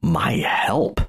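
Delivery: grave, sober, dead-serious tone. Retelling a film character's reply to a plea for help: imitating a serious reply. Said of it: "and he's so serious".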